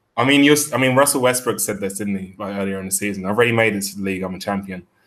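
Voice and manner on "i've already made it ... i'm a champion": normal talking voice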